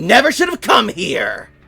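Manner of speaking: enraged, furious, high swooping all-out shout. A character drawing a dagger on a disarmed opponent, angry shout. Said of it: "get angry as she draws a dagger and just shouts".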